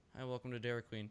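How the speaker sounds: eerie, unsettling, creepy voice. Retelling how a staring Dairy Queen worker greeted them: imitating the creepy Dairy Queen worker. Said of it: "creepy Dairy Queen guy is scaring me".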